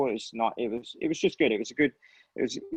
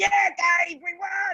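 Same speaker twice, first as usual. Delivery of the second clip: play-acted shrill, very high screamed yell; 3 dB louder than usual. Retelling a teammate yelling after a race win: imitating Danny screaming. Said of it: "he'd be screaming at me in the crash helmet going".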